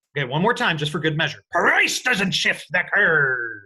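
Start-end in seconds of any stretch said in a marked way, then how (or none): 1.5-3.5 deliberate pirate voice. Leading listeners in repeating a rule for a test, in a pirate voice. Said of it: "you've got to get a good pirate voice in there".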